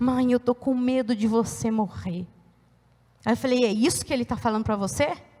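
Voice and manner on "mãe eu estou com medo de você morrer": put-on crying, slower. A mother retells what her crying daughter said to her, imitating someone crying.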